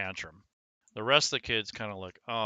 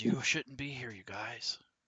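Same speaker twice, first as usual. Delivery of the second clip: hushed, secretive conspiratorial whisper, quieter; 6 dB quieter than usual. Voicing a matron warning players to leave: conspiratorial whisper. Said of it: "kinda looking around conspiratorially".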